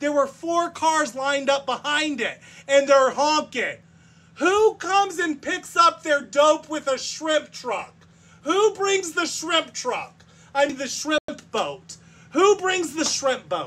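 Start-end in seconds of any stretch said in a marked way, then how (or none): 4.4-13.7 loud, raised hollering at full voice. Complaining about a truck that blocked the road, yelling. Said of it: "I know I'm yelling".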